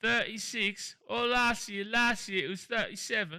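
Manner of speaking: put-on old English accent. Repeating a quote for viewers to name its source: English accent. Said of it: "Got the old English accent".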